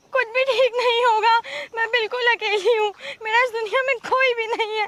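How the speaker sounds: tearful sobbing speech. A young woman being told not to cry answers: crying while talking. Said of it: "अरे तू रो मत".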